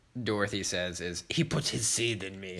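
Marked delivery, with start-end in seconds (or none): 1.3-2.7 put-on Russian accent, quieter. Quoting Dorothy's line from a movie, Dorothy's weird Russian accent. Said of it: "This really weird Russian accent".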